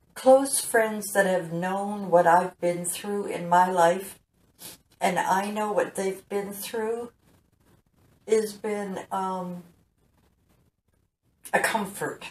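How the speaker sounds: moved, emotional voice, fighting to stay composed. Speaker, about to pause to compose themselves, getting emotional. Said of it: "I'm getting emotional".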